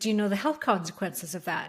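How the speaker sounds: ordinary delivery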